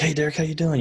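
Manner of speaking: play-acted excited tone. Retelling a phone call from Dad: imitating someone excited. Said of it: "he was all excited and stuff".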